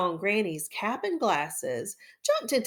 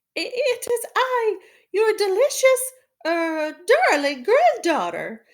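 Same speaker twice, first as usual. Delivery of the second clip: very high, very loud, put-on disguised voice; 12 semitones higher, 9 dB louder than usual. Narrator reading a fairy tale voices the wolf answering Granny, in a put-on high voice. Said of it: "said the wolf in a high voice".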